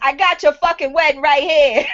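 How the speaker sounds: put-on, played-up Chicago Italian accent. Retelling what he said, the speaker quotes him in a Chicago Italian voice. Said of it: "in my Chicago Italian voice".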